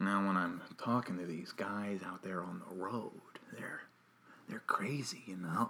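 very quiet, low, hushed, unsettling storyteller murmur, barely audible. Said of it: "he's talking like this".

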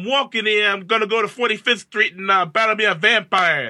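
exaggerated cartoonish New York accent. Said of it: "Any like cartoon New York voice".

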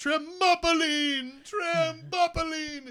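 wailing cry, high and slow.

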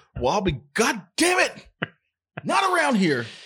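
high-pitched rant, pitch swinging wildly.

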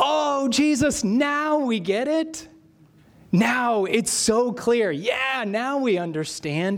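very slow, high, drawn-out, nervous, eager-to-please tone. Retelling the disciples' reply to Jesus: imitating their eager, nervous tone. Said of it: "almost like a nervous turn of phrase to impress Jesus".

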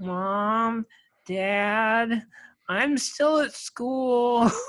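put-on high young kid voice calling out, "dad" drawn out. Retelling hearing a phone message they left as a middle schooler; middle schooler kid voice. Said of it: "my middle schooler voice resonating through the house".

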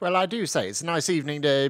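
butchered, bad put-on British accent. Opening a podcast as a joke in a bad British accent. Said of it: "butcher a British accent".

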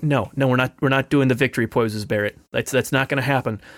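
ordinary talk

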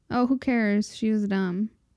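ordinary delivery

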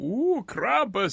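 high, spooky mock voice with drawn "ooh".

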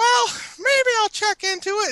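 very high, fast put-on voice, far from normal. Telling others how he has lately been talking, imitating his voice. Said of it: "Why can't you just say it in your normal voice?".

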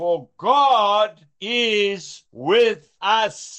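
measured, unhurried, deliberate, drawn-out reading. Reading a Bible verse as a thought for the day, slow, deliberate reading. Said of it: "I read that slowly on purpose".

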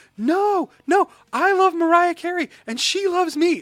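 very high, very loud, frantic outburst. Retelling a girl reacting to her mom: imitating a girl freaking out. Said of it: "the little girl just freaks out".

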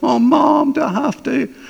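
put-on high, whiny voice like a three-year-old. Speaker mocking their own reply to god, imitating a whiny three-year-old. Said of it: "I sounded like a whiny three-year-old".

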